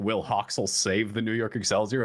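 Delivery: ordinary delivery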